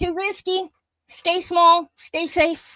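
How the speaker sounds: put-on screaming, high-pitched. Speaker voicing the inner guard that slams the door, screaming.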